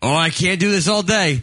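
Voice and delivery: hard-sell infomercial pitchman voice. Mocking an infomercial's fake deadline: imitating an infomercial pitchman. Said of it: "I hate that fake deadline".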